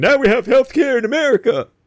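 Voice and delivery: mocking, cheering tone. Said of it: "you had all these idiots running around going".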